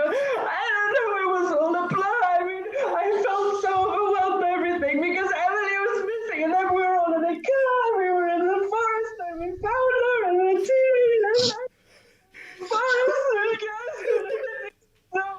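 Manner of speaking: very high, fake-tearful, blubbering, sobbing babble. Playing a character who fakes crocodile tears to persuade Jimmy: mock crying in character. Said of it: "So I start crying. I go".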